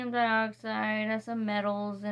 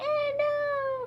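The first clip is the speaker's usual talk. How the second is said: very high tiny screaming voice. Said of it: "they're screaming".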